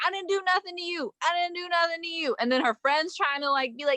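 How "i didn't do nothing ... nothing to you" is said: frantic, high-pitched screaming, repeated, put-on. Retelling a video of a woman resisting police: imitating someone screaming. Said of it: "She's screaming".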